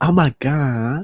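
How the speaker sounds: put-on sassy accent, very high and loud. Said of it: "let me do the accent".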